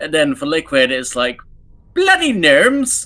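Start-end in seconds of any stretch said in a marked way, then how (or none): 1.9-3.1 put-on upper-class posh voice. Showing how to get into the Liquid voice, upper posh sound. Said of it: "my upper posh twat sounds".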